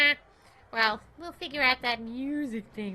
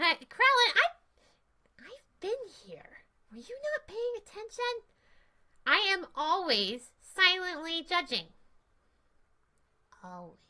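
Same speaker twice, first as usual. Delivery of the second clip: sassy, swooping puppet sidekick voice; 6 semitones higher than usual. A puppet sidekick answering Krellin, in a sassy puppet voice.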